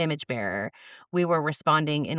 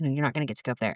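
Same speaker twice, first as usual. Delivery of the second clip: quiet, hushed, confiding stage whisper; 2 semitones lower, 3 dB quieter than usual. Retelling a quiet aside to the speaker's son during a program: imitating her own half-whisper. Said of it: "I kinda whispered to my son".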